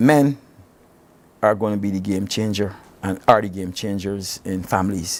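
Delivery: very slow, deliberate, each word drawn out. Answering another speaker in a conversation: speaking very slowly. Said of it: "I'm going to say this very slowly".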